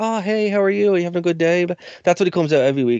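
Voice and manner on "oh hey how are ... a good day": high, friendly, cheery store-greeter voice. Mocking a wrestler's gimmick by comparing him to store greeters, imitating a Walmart greeter. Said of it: "you know guys who are like".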